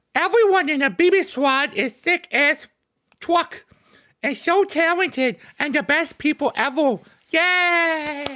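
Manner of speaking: put-on very high, slow young anime character voice. Reading a viewer's message aloud as written, young anime character voice. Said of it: "you're gonna sound like a young anime, uh, character".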